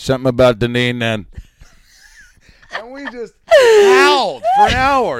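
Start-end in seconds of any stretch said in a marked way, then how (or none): 0.0-1.3 put-on loud New Jersey accent. Retelling what a woman said to Tom that he couldn't remember: New Jersey accent. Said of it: "Something in that New Jersey accent".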